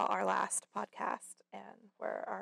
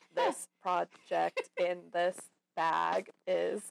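flat, very slow robotic monotone voice; 4 semitones lower, 4 dB louder than usual. Parent retelling how her daughter talked during a project, in a robot voice. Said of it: "my daughter sounded like a robot".

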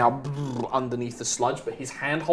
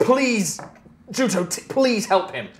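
desperate begging, high, slow and drawn out; 7 semitones higher than usual. Voicing a character reaching out a hand to someone: desperate plea.

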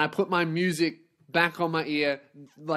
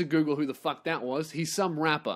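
plain

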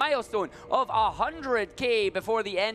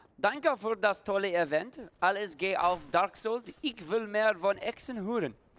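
non-native German that sounds Dutch. Streamer attempting to read a donation message in German, Dutch-sounding German. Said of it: "Sounded Dutch".

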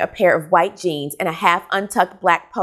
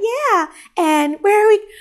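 very high, exaggerated, overdone girly female voice; 14 semitones higher than usual. Retelling how male audiobook narrators voice women: imitating an exaggerated girl voice. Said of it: "guys do the opposite".

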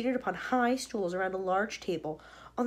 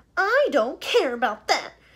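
loud, sudden yelled shout; 6 semitones higher, 10 dB louder than usual. Reading a child answering her mother about wanting a squirrel, shouted. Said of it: "shouted Veruca".

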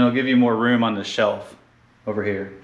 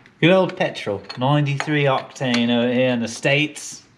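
poorly done mix of Australian and British accents. Narrating work on an engine, slipping into a bad Australian-British accent. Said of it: "Like a combination of an Australian accent and British?".

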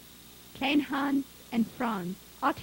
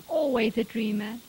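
ordinary delivery

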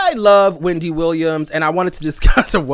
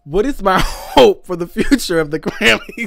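talking through laughter, higher pitch; 3 semitones higher than usual. Reading a question from the comments aloud, laughing while talking. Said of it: "I gotta stop laughing".

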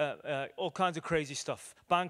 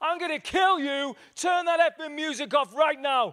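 full-on, very loud, shrill high-pitched screaming; 11 semitones higher, 8 dB louder than usual. Recounting a man who got in the speaker's face, imitating screamed threats. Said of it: "he's screaming threats".

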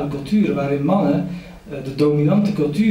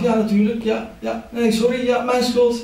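eager, meek voice with pitch raised; 8 semitones higher than usual. Retelling his replies to a policewoman calling him to account, playing meek. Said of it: "En ik was heel braaf".

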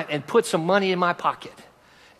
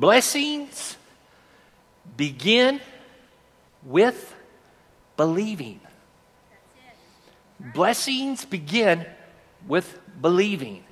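very slow, halting, word-by-word spacing. Speaking to listeners, repeating a phrase so they can see it: very slow delivery. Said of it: "I'm saying it slow".

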